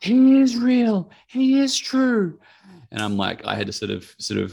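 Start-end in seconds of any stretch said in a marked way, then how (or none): 0.0-2.4 put-on shrill, very slow, very high, drawn-out child's shriek. Retelling how the little girl next door reacted: imitating a girl screaming. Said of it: "the little girl start screaming".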